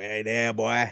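Creole-accented speech. Asked what accent to do, the speaker tries a strong Creole accent. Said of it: "Like a super Creole".

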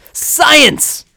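shrill, very high, loud, thrilled scream. Showing how Bill Nye screams a word: screaming like Bill Nye. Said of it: "he always screams the word science".

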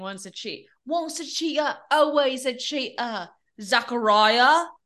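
put-on British accent. Quoting what the girls kept saying about a man, in a British accent. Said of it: "the British accent is back".

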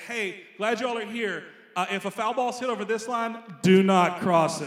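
booming, very loud, stern, serious delivery. Retelling what prison guards told the softball teams: imitating a guard's loud, serious warning. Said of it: "They would say it just like that, like, really loud, like, seriously".

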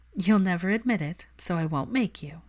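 ordinary delivery, nothing marked

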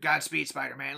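put-on villain voice. Quoting a movie villain switching back into his other voice: imitating the Goblin voice. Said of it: "switches right back in".

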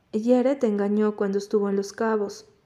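usual speaking voice

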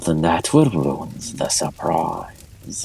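low, soft growl in character voice. Speaker voices a character answering the players, lowering into a growl. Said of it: "lowers into a growl".

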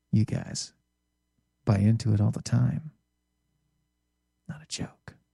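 imitated whispering voice. Retelling what he said while leaning toward someone at the table: imitating someone whispering. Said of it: "Are we whispering now?".

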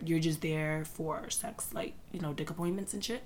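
very quiet whisper. Explaining a Twitter argument to listeners, whispering. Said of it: "I had to whisper".

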